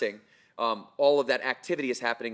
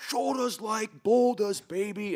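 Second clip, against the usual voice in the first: very high, drawn-out, acted-out coach yell; 10 semitones higher than usual. Recalling a college strength coach from upstate new york, imitating the coach's yell. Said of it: "would walk around yelling at our baseball team".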